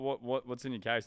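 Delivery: normal talking voice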